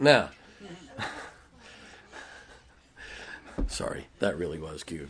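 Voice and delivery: whispered, soft, breathy, holding back a laugh. Reacting to a quoted saying the speaker found cute, trying not to laugh. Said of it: "I'm trying not to laugh, but it didn't work".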